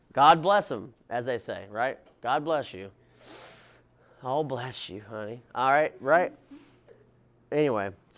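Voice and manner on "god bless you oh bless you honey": put-on Tennessee country accent. Imitating the patients cared for in Springfield: put-on country accent.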